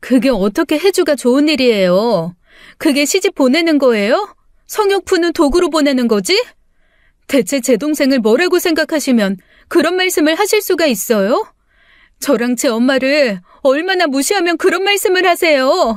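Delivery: angry, high shouting. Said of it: "왜 소리를 지르고 그래?".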